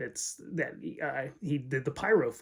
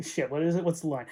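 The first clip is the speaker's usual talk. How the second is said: usual speaking voice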